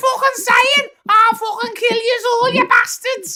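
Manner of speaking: put-on nasal Scouse, very high, very loud. Showing how the local accent grew more nasal over time, in a nasal Scouse accent. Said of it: "we got more and more fucking nasal. And we went".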